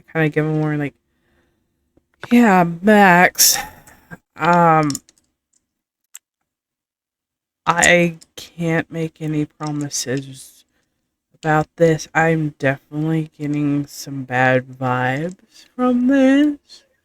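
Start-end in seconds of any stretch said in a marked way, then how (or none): 7.7-16.8 very slow, low-key, hushed voice. In a tabletop role-play, their character answers Max, hushed voice. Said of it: "in a hushed voice".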